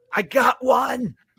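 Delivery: very high-pitched half-shout. Narrating a game scene where a kid calls out after a fighter falls, kind of shouting. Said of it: "but he kind of shouts".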